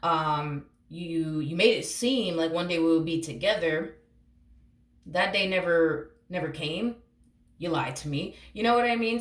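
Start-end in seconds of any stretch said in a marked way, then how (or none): none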